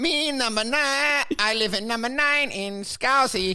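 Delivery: put-on Chinese accent on English words. Retelling a liverpool woman who woke up with a new accent, imitating a chinese accent. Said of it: "woke up with a Chinese accent".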